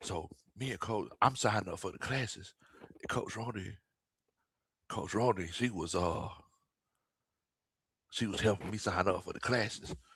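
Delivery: very quiet hushed whisper, kept down low. Telling listeners about signing up for classes so the coach won't hear, whispering. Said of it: "I'm gonna talk a little bit low so she can".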